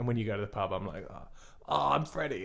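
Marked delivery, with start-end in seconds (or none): 1.1-2.4 put-on mocking voice, quieter, slower. Teasing the listener about impressions done at the pub, mocking Freddie impression. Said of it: "I can do impressions of any voice that you can do".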